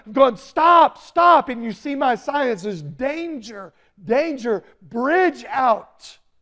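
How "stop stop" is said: frantic, very loud, high-pitched urgent yell. Describing flagging down a driver before a washed-out bridge, acting out yelling. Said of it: "And I'm yelling".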